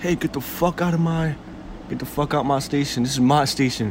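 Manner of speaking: put-on angry voice. Recounting how a man with a badge yelled at him, retelling an angry outburst. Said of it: "he got mad and he was like".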